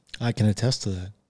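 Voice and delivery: deep voice. Agreeing with a remark about a body transforming: deep voice. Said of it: "That's the way he said it in the deep voice".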